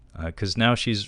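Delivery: ordinary talk, nothing marked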